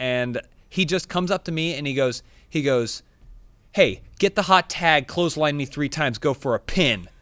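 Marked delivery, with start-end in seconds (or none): 3.7-7.0 angry-sounding delivery. Retelling what a wrestling opponent said to them: imitating someone saying it angrily. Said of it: "he says it like he's angry".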